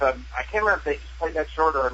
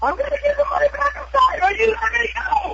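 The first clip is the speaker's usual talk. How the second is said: put-on very high screaming and crying at once; 4 dB louder than usual. Recounting a filmed scene where the finger is cut off, reenacting screaming and crying. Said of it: "Really screaming and crying at the same time".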